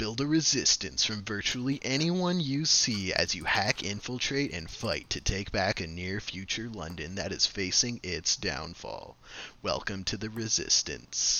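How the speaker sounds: movie trailer narrator voice. Reading a game's promotional quote aloud: movie trailer voice. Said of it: "Your movie voice".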